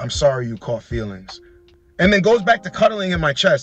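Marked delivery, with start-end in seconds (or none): 0.0-1.4 soft, close-up, hushed half-whispered stage whisper. Retelling what a woman said after hooking up: imitating her half-whisper. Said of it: "looks up at me and whispers".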